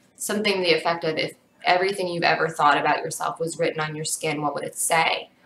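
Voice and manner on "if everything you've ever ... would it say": ordinary delivery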